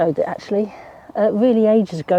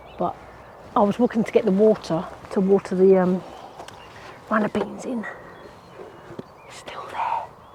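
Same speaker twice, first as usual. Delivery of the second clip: hushed, quiet, careful talk; 6 dB quieter than usual. Speaker outside watching a robin, not wanting it to fly away: talking quietly. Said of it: "I'm talking quietly because I don't want it to fly away".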